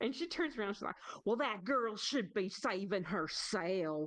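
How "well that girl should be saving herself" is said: terrible put-on Southern drawl, very slow. Retelling a tv scene where a woman answers a cop, terrible southern accent. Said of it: "terrible Southern accent".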